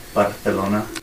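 put-on Castilian Spanish lisp pronunciation. Imitating how people from spain say a city name: spain spanish lisp. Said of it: "they have, like, a little lisp".

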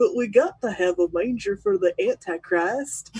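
little cartoon critter voice. Retelling a South Park Christmas episode, the speaker does the South Park critter voice. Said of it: "I did all the little cartoon voices".

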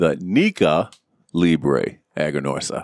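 very slow, low, deliberate, each syllable spaced. A speaker tells everybody what he's smoking this week, said slowly. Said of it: "I'm going to say it slowly for you".

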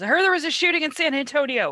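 panicked, alarmed voice pitched high. Retelling a call from mom: imitating mom's panicked voice.

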